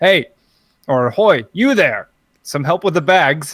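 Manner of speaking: loud, shouted call. A player character calls to a half-orc for help with bags: shouting. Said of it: "I'm probably going to shout at the orc".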